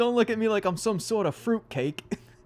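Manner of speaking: put-on heavy, thick, very high-pitched Italian accent. Quoting a favorite movie line to the other speaker, in a thick Italian accent. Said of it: "such a thick, like, like Italian accent".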